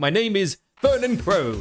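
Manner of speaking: best stage-host presenter voice, announcing. Opening a presentation by announcing own name, in best presenter voice. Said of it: "put on my best presenter voice".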